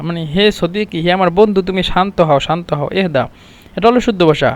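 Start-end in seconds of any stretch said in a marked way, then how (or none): none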